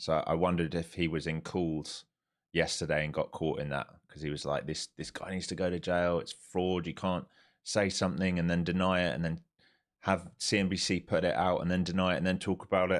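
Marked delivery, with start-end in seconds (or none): none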